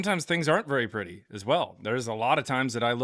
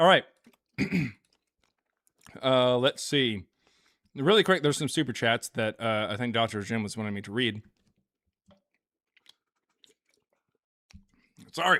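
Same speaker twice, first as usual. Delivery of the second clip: talking while chewing, mouth full. A host about to read super chats, talking while chewing. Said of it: "I'm so sorry for all the chewing".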